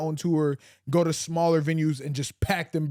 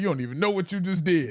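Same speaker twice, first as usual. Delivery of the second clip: put-on talking while laughing, higher pitch; 2 semitones higher than usual. Retelling how a man reacted at an audition, imitating someone laughing while talking. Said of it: "He's just cracking up laughing".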